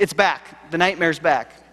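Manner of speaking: loud put-on kid's yell. Retelling what the kid yelled after the light went off: imitating a child yelling. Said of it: "and he yells".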